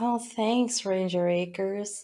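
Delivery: acted, drawn-out, soft, slow sarcastic tone. Retelling how a woman answered a man's pitch to her, mock-sarcastic. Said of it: "She is sarcastic towards him".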